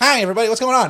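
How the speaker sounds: bad, terrible, high-pitched cartoonish voice. Contrasting a vampire sound with a greeting: terrible Ellen DeGeneres impression. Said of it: "That's a terrible impression".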